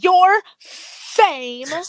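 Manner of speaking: very high, emphatic country-club woman voice.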